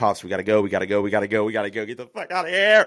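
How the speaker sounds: fast, tearful, panicked bawling. Retelling crying as a kid, begging Pops to leave: imitating own past bawling. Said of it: "I just start crying, bawling my eyes out".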